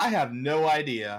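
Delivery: proud, hearty voice. Voicing a character who turns away and answers: proud, hearty voice. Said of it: "she says out loud in a proud, hearty voice".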